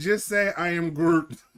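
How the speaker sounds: normal talking voice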